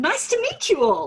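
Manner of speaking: chirpy, cheery voice. Recalling waving at the room at the end of her prize speech; retelling a cheerful greeting. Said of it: "I waved cheerfully at the room and said".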